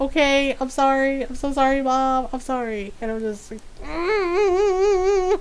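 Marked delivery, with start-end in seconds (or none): 0.0-2.9 speech broken up by laughter. Retelling how she apologized to Mom for the bagels, imitating a laughing apology. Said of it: "And she started laughing".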